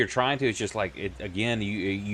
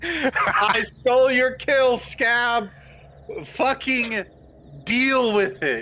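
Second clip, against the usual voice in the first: hollering, shouting; 7 dB louder than usual. Claiming victory over scab after stealing his kill, yelling. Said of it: "He's like yelling at a hyena".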